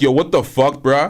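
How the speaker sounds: ordinary talk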